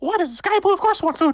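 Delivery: squeaked out, pitched way up high. Game narrator voicing a mouse the players offer food, in a Mickey Mouse voice. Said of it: "I didn't realize I was doing Mickey Mouse".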